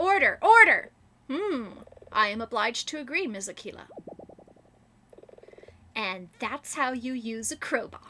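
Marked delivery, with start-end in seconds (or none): 0.0-3.9 firm delivery. Voicing Judge Tommy addressing Ms. Aquila in court, Judge Tommy voice. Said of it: "Judge Tommy has always run a tight ship. / Whoa, she can be a real hard ass. / Your Honor. / Judge Tommy has always run a tight ship".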